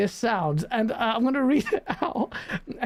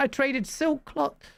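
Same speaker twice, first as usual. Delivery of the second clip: normal talking voice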